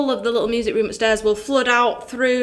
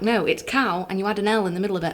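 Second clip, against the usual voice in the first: ordinary talk, nothing marked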